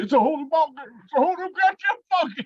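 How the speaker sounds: put-on terrified old man voice, very high and rising. Quoting a favorite character's line the speaker often repeats, imitating scared Earl Bassett. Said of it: "He's like a scared old man".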